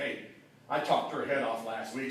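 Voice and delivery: ordinary talk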